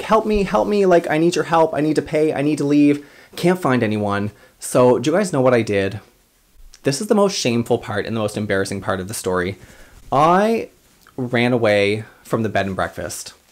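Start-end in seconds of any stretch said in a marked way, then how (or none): 0.0-3.1 mock high-pitched screaming. Retelling running around a bed and breakfast looking for help, acting out own screaming. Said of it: "running around the house screaming like".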